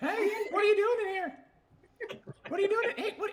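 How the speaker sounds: put-on gnome voice, very high and loud. Asked for the gnome voice, a player speaks as a gnome: gnome voice. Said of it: "hear your gnome voice".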